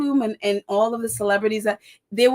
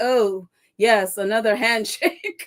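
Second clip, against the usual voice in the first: mock, put-on sarcastic tone. Retelling a president's reply to a handshake request: imitating sarcastic tone. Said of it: "He was just so sarcastic to the whole thing".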